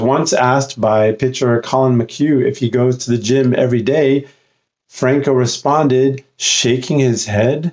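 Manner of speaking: ordinary talk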